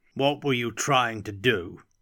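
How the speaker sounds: insistent, pressing, demanding tone. The Graf cuts Katerina off mid-sentence, demanding. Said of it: "demanded the Graf, his thin face drawn into tight lines".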